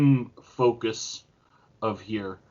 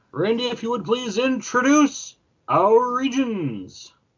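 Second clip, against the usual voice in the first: put-on announcer voice, very high-pitched; 10 semitones higher than usual. Asking Randy to introduce the regions, in a best announcer voice. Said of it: "in my best announcer voice".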